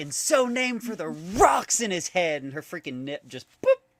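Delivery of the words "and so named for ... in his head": very high, drawn-out snide sniping. Retelling a film scene, imitating Magenta bitching at Rocky. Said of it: "when she was bitching at Rocky".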